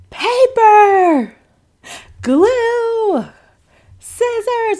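very high, thrilled, delighted scream. Retelling how the artistic child opened her gift box, imitating a delighted scream. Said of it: "she just screams".

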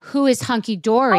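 normal talking voice

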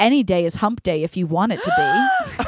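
dead serious, straight-faced, swooping delivery. Retelling own past reply to another intern: imitating a straight-faced delivery. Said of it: "as straight-faced as I have ever been in my life".

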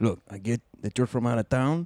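polite, courteous, respectful character voice.

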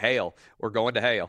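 put-on deep Southern accent. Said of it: "my deep Southern accent".

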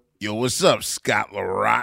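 mock threatening voice. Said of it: "was the most evil intro of all time".

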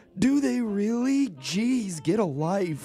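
put-on sweet very high old man voice. Quoting a man's reply to a show host, the speaker uses a sweet old man voice. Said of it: "in his sweet old man voice".

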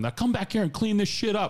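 play-acted, very high-pitched yell. Retelling a yell at two men after a parking-lot fight: retelling own yelling. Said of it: "I yelling at 'em".

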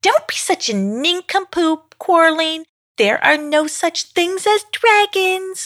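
small, rude, very high little voice. Rudella answers Quarreling, who wants to find a dragon; Rudella's rude little voice. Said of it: "quipped Rudella in a rude little voice".

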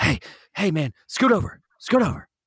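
mock out-of-breath voice. Retelling a man opening the car door at night: imitating someone out of breath. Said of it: "out of breath".

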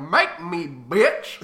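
loud cartoon dog voice. Retelling a scene, the speaker quotes Goofy's line in a Goofy voice. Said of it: "Donald Duck".

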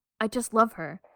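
sincere, earnest, heartfelt delivery. Announcing the episode title: sincere reading of the title. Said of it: "I tried to be sincere with how the title sounded".

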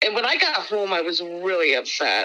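ordinary talk

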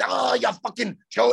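put-on Irish accent. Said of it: "he does the extra with the Irish fucking shit".

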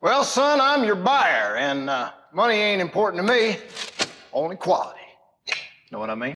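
put-on laid-on high, southern old-timey prospector voice. Voicing a buyer replying to the host, in an old-timey prospector voice. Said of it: "Like the old-timey prospector who struck gold".

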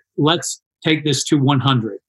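ordinary talk

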